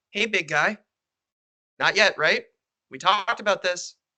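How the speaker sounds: small, tiny, wee little voice. Game master voicing a little voice tugging at a player's wrist, tiny little voice. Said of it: "hear a little voice go".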